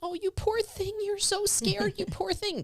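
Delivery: very high, soft, fretful, worried soothing coo. Demonstrating the voice not to use with someone scared: soft, worried, soothing. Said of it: "this soft voice that makes you think that I sound worried too".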